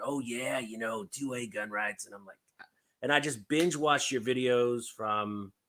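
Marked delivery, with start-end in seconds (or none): 0.0-2.1 gravelly wrestler promo voice. Retelling how the other speaker sounded online: Macho Man Randy Savage voice. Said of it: "you kinda sound like that Macho Man Randy Savage".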